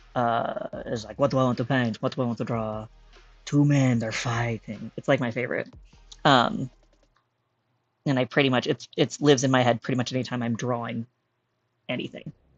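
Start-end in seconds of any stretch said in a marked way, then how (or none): 1.2-4.9 put-on, seemingly Eastern European accent. Quote the guy from a TikTok about drawing, in a seemingly Eastern European accent. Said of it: "who has a seemingly Eastern European accent".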